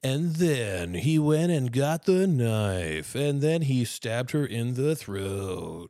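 odd, drawn-out true-crime narrator cadence. Mocking how kids narrate true crime videos, weird true-crime narration cadence. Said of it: "they'll do this voice ... that weird fucking cadence".

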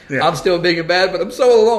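forlorn lonely coyote voice. Joking about a coyote that lost its mom: put-on lonely coyote voice. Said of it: "like the one that's lost his mom".

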